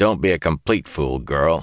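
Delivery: said harshly. Narrator reads Lan's reply to Zareen, harsh. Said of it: "Lan said harshly".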